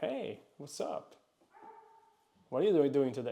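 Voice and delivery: light, playful, flirtatious tone. Showing an abundant way to show attraction: flirtatious. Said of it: "you are being flirtatious".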